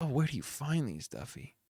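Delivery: imitated wispy voice. Showing listeners how a man talks as he asks Duffy a question, imitating a wispy voice. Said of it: "listen to how like fucking wispy his voice is".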